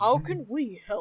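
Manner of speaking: very loud booming king voice. Recapping a game scene, voicing a character's question in King Harkinian voice. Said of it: "Let me summon my King Harkinian voice".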